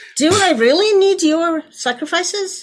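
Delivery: sassy, very sarcastic put-on voice. Acting out God's reply about the sacrifices: put-on sarcastic sassy God voice. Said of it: "very sarcastic".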